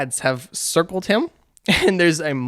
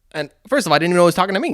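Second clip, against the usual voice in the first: ordinary talk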